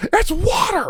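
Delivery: exasperated high squeal.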